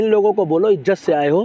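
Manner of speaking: ordinary talk, nothing marked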